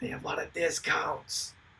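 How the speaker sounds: very soft, barely-there whisper. Telling listeners that a collectors' shop has lots of discounts: whispering. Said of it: "Why am I whispering?".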